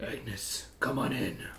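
whispered, slow, drawn-out, breathy skeletal dragon voice. Voicing a huge skeletal dragon bouncer greeting Agnes: skeletal dragon bouncer voice. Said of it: "recognizes Agnes and says".

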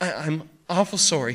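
fretful, anxious, worried, apologetic tone. A narrator voices the kid speaking up before the angry Barney Hatch can shout, anxious. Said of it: "the kid said anxiously".

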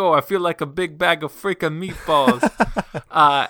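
hammy, loud, slow, drawn-out put-on Italian accent. Imitate his Saturday Night Live character from the Gemma sketches, imitating the character's Italian accent. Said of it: "does this like Italian accent".

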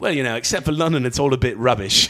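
badly done, butchered put-on English accent. Quoting what someone said, bad English accent imitation. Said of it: "I apologize for butchering the accent".

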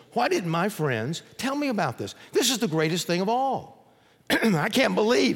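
voice catching with emotion. Speaker retells a man's reaction in a story that moves them, choked up. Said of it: "Story always chokes me up".

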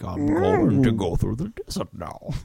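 creaky, raspy character voice swinging up and down. Retelling how the lead sounds in Mad Max: Bane voice. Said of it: "his voice, like, he's just like".

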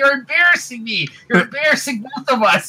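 very high-pitched yelling. Retelling a scene between two guys: retelling a yell. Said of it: "the two guys are just yelling at each other".

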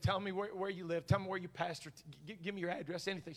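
imitated tearful woman's voice. Retelling what a weeping nurse said at a gas pump: imitating a woman crying. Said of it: "Rivers started coming down her face".

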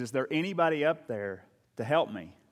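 ordinary talk

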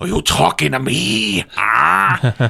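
slow and drawn out, "ah" stretched. Imitating the Joker actor's voice: Al Pacino doing Heath Ledger Joker. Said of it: "it's Al Pacino doing a Heath Ledger impression".

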